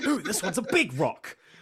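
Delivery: very loud, high, bellowing big dumb meathead voice. Riffing on a comic scene, voicing Knight as a meathead. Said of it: "our new super meathead".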